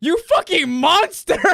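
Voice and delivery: acted furious outburst, very high-pitched and loud. Retelling how a player got so mad after being told to roll strength, imitating someone so mad. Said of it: "He got so mad at him".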